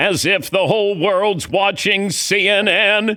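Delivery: very high, drawn-out, indignant and scornful. Retelling what Howard Cosell said to the speaker: Howard Cosell impression. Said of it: "That was good".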